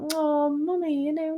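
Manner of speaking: put-on high, slow, little cutesy toddler voice. Describing how a toddler begs their mother for something, little cutesy toddler voice. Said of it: "little cutesy voice".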